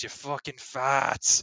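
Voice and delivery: put-on Boston accent rant. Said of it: "he almost goes, like, full Boston".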